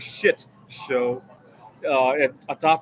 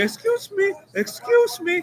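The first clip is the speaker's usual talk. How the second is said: mock exaggerated, very high-pitched, drawn-out shouting. Retelling a waiter chasing after a small tip: imitating a waiter shouting.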